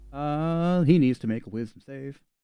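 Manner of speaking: ordinary talk, nothing marked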